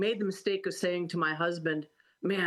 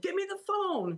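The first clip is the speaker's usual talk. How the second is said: put-on shrill shout, pitched way up; 14 semitones higher than usual. Retelling own reaction to a roller derby skater call-out: retelling own past yell. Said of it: "I'm yelling".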